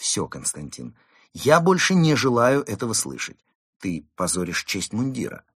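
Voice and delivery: ordinary talk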